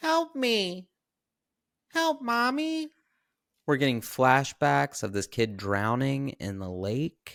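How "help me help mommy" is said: put-on very high, drawn-out small boy's voice. Retelling a film scene with flashbacks of a drowning kid, little boy's voice. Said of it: "we hear this little boy's voice again saying".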